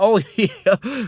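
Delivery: high, mocking, sarcastic tone. Retelling an argument and quoting a man's reply, retelling a sarcastic reply. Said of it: "He was acting sarcastic".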